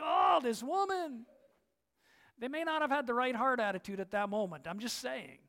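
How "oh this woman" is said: mock worn-out, fed-up, exasperated annoyance. Retelling the disciples reacting to a begging woman: imitating annoyed disciples. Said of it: "rolling their eyes and holding their ears".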